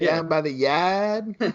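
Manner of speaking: put-on Boston accent with "yard" drawn out. Talking about Boston accents in films, doing Brody from Jaws Boston accent. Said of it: "practice it like Brody in Jaws".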